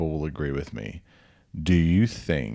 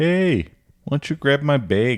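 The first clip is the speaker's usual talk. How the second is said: attempted South Dakota accent, high-pitched; 10 semitones higher, 6 dB louder than usual. Speaker recalls a friend trying a regional accent, doing a South Dakota accent. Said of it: "tried to do a South Dakota accent".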